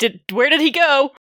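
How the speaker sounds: high-pitched shouting. A player's character grabs something and sprints off, shouting at servants. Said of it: "as I'm shouting at servants".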